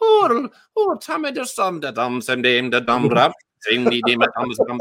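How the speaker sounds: poor Caribbean accent slipping in and out.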